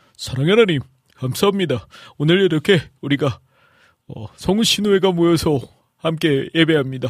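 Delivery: voice actor impression, announcer voice.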